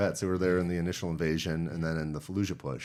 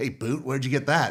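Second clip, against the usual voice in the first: play-acted, pitched-up, needling, antagonizing voice; 7 semitones higher, 3 dB louder than usual. Retelling how a Marine at one five confronted the speaker: antagonizing voice imitating Marty Mortensen. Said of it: "kind of, you know, antagonizing voice".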